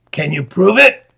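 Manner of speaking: rasping, raspy voice. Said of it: "rasped the wayfaring man".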